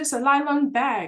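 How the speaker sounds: put-on Nigerian accent, slow, high, drawn out. Retelling own childhood words to puzzled classmates: imitating own childhood Nigerian accent. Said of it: "And with the accent".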